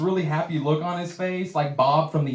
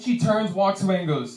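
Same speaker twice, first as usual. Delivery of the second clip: plain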